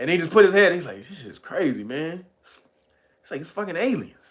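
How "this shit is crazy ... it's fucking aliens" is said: casual, unbothered, nonchalant offhand delivery. Retelling what a questioned witness said about the incident: imitating a nonchalant remark. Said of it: "so nonchalantly".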